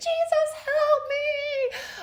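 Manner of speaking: high-pitched, shrill screaming with drawn-out "me". Retelling calling out to Jesus during a birth: imitating a scream. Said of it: "screaming, like".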